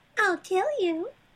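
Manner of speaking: put-on high-pitched old lady voice. Describing an older woman who is a role model, the speaker imitates her high voice. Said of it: "she has like this high voice".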